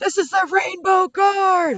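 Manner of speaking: very loud, shrill, high shouting yell. Game master acting out a player character's announcement, loud shout. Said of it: "be a little louder, laddie".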